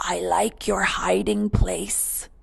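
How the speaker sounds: soft whisper. Grandpa, sitting behind the tree, speaks to the hiding Baby, whispered. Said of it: "he whispered".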